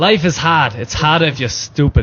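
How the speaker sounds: imitated American accent. Urged by the others to give it a go, speaker tries an American accent. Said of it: "take a gander at an American accent".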